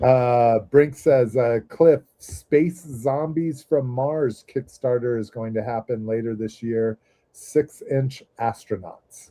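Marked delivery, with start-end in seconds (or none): none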